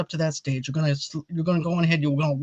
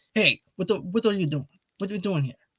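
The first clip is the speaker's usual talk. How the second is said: put-on Italian-American accent in a film style; 3 semitones higher than usual. Show how an Italian impression should be done, as a Robert De Niro impression. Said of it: "If you want to do an Italian impression, be like Robert De Niro".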